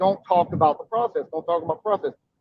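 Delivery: ordinary delivery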